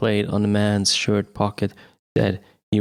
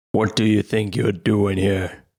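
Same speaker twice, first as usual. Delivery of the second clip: gruff, rough, demanding voice. Narrator reading a man catching Billy at the cabinet: rough, demanding voice. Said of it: "A rough voice demanded".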